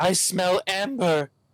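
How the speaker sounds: shrill wheeze, pitched way up, very high. Voicing a captive man laughing as a sack goes back over his head, wheezing voice. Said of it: "he wheezes".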